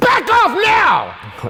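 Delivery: shrill, loud, high and forceful barked delivery. Demonstrating how to say something that gets attention: forceful command. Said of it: "command presence ... It might sound something like this".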